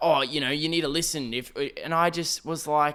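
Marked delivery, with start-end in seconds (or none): 0.0-1.3 put-on bristling, defensive, self-justifying lecturing tone. Retelling a customer's reply after being called out: imitating someone getting defensive. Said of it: "he gets a little bit defensive and he starts going like".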